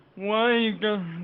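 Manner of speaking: mock stuffy-nosed voice. Doing an impression of a sick absent friend: awful impression of Average with congestion. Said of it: "That was an awful impression".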